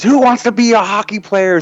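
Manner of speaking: very high-pitched coach holler. Retelling the hockey coach calling out to the kids, retelling a coach yelling. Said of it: "he's yelling at the kids".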